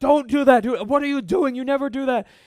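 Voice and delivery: shrill, very loud, high-pitched scolding yell. Retelling yelling at a hard-headed child: imitating yelling at a child. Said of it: "there was a time when I was yelling at one of them".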